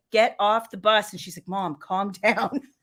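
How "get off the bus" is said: ordinary talk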